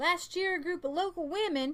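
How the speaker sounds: put-on American southern accent. Reading a news article aloud to the audience: southern accent. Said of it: "why am I doing a southern accent?".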